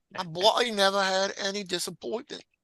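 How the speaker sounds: put-on high Irish accent. Asked to quote a friend in his accent: put-on irish accent. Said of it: "you gotta say it in his accent".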